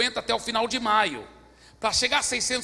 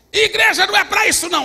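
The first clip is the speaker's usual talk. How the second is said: high-pitched, shrill shout at full volume; 9 semitones higher, 11 dB louder than usual. Retelling a man who came down the church aisle, imitating a man yelling.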